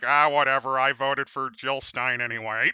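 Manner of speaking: deadpan, unchanging, dead level one-note monotone. Voicing Squidward in a joke scene: Squidward voice. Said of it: "Squidward's like".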